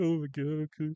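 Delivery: startled, frightened, cowed tone. Retelling how the loud coworker reacted when told off: imitating a frightened reply. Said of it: "get wide-eyed and, like, shake".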